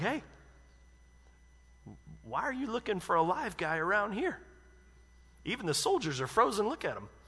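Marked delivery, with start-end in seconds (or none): 0.0-4.4 play-acted, wry, lightly sarcastic little quip. Imagining a smirking remark in a scene, mock-sarcastic smirking remark. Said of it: "a little sarcasm like".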